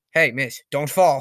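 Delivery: slow, taunting, mocking tone. Retelling a wrestler taunting another on the stairs: imitating Edge mocking. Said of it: "Just making fun of him".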